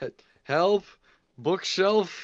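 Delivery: stammered, loud, high-pitched yelling. Calling for help while trapped under a bookshelf: yelling for help. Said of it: "I'll yell for help".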